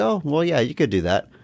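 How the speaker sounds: casual, relaxed, untroubled, easygoing tone. Recounting a woman's reply to a request to exhume a grave: imitating a relaxed tone. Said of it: "It's disarming how relaxed she is".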